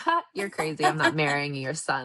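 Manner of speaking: mock speaking through laughter, scoffing, dismissive. Retelling the princess answering the queen in a story, imitating someone laughing. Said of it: "she just like started laughing".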